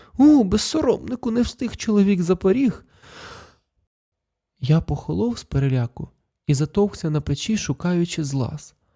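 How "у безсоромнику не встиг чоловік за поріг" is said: stifled wild joy, pitched up. At night, the narrator hears his mother's voice from the entryway: wildly joyful, stifled. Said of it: "скажено радісний і придушений материн голос".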